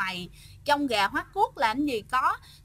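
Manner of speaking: ordinary talk, nothing marked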